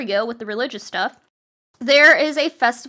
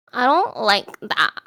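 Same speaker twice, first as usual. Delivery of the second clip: put-on wary, cautious little-child toddler voice; 3 semitones lower, 4 dB quieter than usual. Quoting how a two-year-old niece says it: imitating a two-year-old niece. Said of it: "She just goes".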